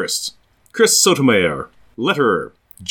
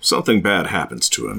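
very low narrator voice; 7 semitones lower, 4 dB quieter than usual. Recapping a plot, cutting in with the outcome: narrator voice. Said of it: "Narrator voice".

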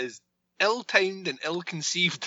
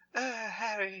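put-on soft, hushed, high-pitched English accent; 6 semitones higher, 9 dB quieter than usual. Voicing the woman he hears in the back of his head, put-on english accent. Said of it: "Why did I make her sound English?".

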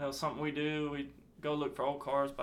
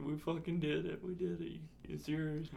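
re-enacted crying, much quieter; 6 dB quieter than usual. Retelling calling their dad after the win, re-enacting crying. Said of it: "I'm crying".

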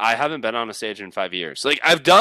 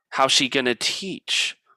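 ordinary talk

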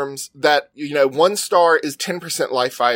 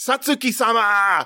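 acted-out scream, higher pitch; 5 semitones higher than usual. Retelling how the characters call out a name: imitating characters screaming a name. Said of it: "they just start screaming her name".

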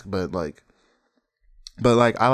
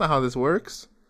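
ordinary delivery

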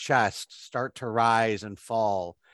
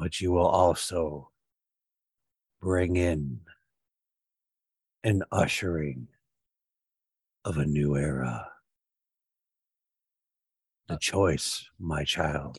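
deep, rich, powerful voice, lower pitch; 6 semitones lower than usual. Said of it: "It sounds like Father Carr, but it's deeper".

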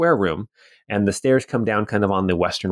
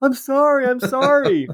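very high-pitched, drawn-out yell. Retelling how Colbry tripped and knocked Nari down the stairs; Colbry yelling down. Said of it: "he's just yelling down".

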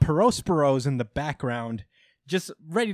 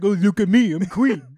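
put-on dumb voice like a 7-year-old, louder; 5 semitones higher, 7 dB louder than usual. Teasing the other speaker for giving characters dumb voices, dumb voice like a 7-year-old. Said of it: "like 7 year olds like".

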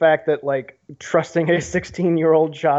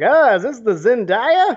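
put-on slow, high, drawn-out elderly man's voice; 7 semitones higher, 4 dB louder than usual. Teasing the other speaker for sounding old, in an old man voice. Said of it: "you sound like that old man".

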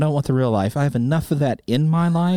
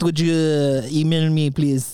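put-on French accent. Asking listeners in France to email, joking: put-on French accent. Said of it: "if I did it in a, uh, French accent".

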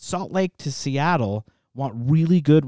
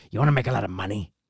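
put-on low elderly male voice; 6 semitones lower than usual. Retelling what an old man told him, in an impression of the old man. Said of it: "he does the impression of the old man".

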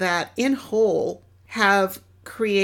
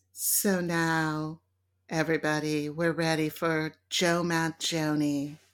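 smooth jazz radio DJ voice, lower and quieter; 4 semitones lower, 6 dB quieter than usual. Introducing a jazz trumpeter to everybody, in a smooth jazz radio voice. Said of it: "it's like the smooth jazz station voice".

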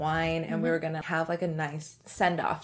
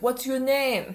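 fake, high, put-on French accent; 8 semitones higher, 3 dB louder than usual. Retelling what a drunk man said to them: imitating a French accent. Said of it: "That's a French accent".

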